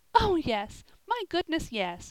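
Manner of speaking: very high-pitched, comforting, reassuring exclamation. Polly answers the child's question, crying out. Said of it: "cried Polly".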